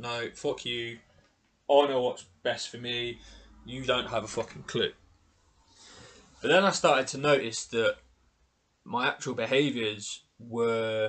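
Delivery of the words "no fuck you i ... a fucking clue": normal talking voice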